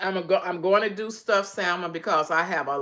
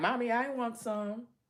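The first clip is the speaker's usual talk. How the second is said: soft, slow, pleading pet voice; 4 semitones higher, 8 dB quieter than usual. About to give her dog a jalapeño, speaker voices her dog begging for one. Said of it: "She's looking like".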